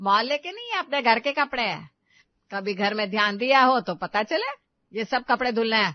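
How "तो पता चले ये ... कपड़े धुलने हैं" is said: ordinary delivery, nothing marked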